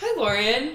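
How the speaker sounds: put-on bright, cheery, friendly voice. Retelling how the lead defense attorney walked in: imitating a nice cheery greeting. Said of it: "nice and cheery".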